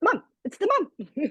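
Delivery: put-on Australian accent. Praising recommendations for mum athletes, saying mums in a put-on australian accent. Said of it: "you can actually only say it in an Australian accent".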